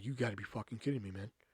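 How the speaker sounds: mock-pissed disbelief. After a man writes a zero on his test, retelling pissed-off disbelief. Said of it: "So now I'm fucking pissed".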